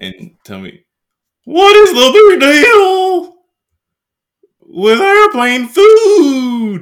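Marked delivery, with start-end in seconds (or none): 1.5-6.8 loud, very high, belted stand-up delivery, "food" stretched out. Trying the same bit again for the other speaker, this time in a Jerry Seinfeld voice. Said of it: "let me try the same bit in like his voice".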